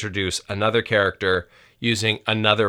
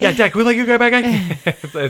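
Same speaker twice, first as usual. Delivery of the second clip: put-on child voice, slurred, rushed, higher and louder; 13 semitones higher, 6 dB louder than usual. Repeating the kids' request with barely any syllables: imitating kids slurring words together. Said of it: "barely any syllables in there".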